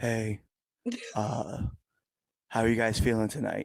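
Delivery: mock monotone announcer. Mocking the person who was supposed to hype the crowd, imitating a monotone announcer. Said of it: "you're over here like".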